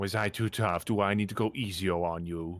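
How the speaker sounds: mocking, taunting voice. Voicing an unseen voice taunting resting adventurers: taunting voice. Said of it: "The voice continues to taunt you guys".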